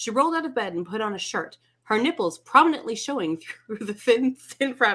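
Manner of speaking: reading aloud through laughter, laughing throughout. Speaker reads a passage aloud and keeps laughing, reading while laughing. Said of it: "Sorry, I'm laughing".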